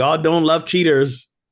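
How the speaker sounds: put-on, playful, teasing yell, loud and high. Near the front of a line, the speaker retells what they yelled: retelling own yell. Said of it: "I'm just yelling out".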